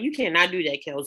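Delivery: ordinary delivery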